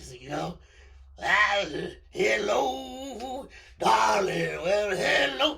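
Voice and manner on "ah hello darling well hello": very slow, drawn-out, stretched trumpeter's voice. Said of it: "I'm not great with the impressions".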